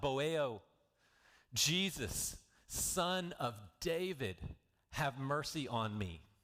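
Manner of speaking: mock pleading, very slow and drawn-out. Retelling a blind man calling out to Jesus: imitating someone calling out for mercy. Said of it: "So he called out".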